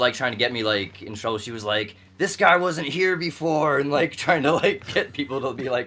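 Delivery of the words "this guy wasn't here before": put-on play-acted drunk woman's voice, loud, high, angry. Retelling a drunk girlfriend trying to get him in trouble, imitating her angry voice. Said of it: "she was all mad".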